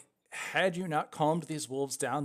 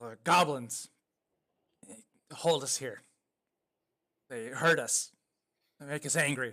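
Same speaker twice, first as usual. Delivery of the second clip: words growled out in a wolf voice. Speaker voicing a wolf that talks to the listeners, growling wolf voice. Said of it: "the wolf is able to growl out to you".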